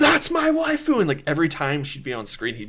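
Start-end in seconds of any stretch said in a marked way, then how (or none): 0.0-1.0 mock very high, full-volume, top-of-the-lungs shriek. Retelling how a moviegoer stood up and yelled: imitating someone yelling at the top of his lungs. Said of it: "at the top of his lungs goes".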